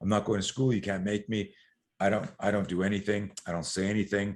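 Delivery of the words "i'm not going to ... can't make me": normal talking voice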